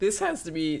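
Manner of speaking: breaking, cracking voice mid-phrase. A streamer talks to chat about an interview, voice cracking. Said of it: "Oh my freaking voice crack".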